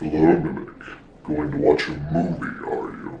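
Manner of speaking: low, deep man's voice. Speaking from a TV to someone about to watch a movie, in a deep voice. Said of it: "deep voice guy".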